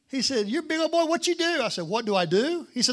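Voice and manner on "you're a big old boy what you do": put-on country boy accent, very high-pitched. A speaker retells a stranger asking what he does for a living, doing a country impression. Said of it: "Let me do my best country impression of this guy".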